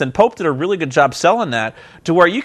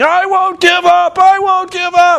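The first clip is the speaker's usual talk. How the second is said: mock loud, very high, drawn-out hollering scream; 13 semitones higher, 6 dB louder than usual. Recounting a wrestling match where Pope won't tap out of the figure four, imitating Pope screaming. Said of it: "He's screaming".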